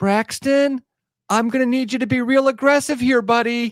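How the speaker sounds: very high, sugary-sweet mom voice. Retelling a mom calling to her kid at the arena, mimicking a sweet, nice mom. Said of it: "as nice as possible".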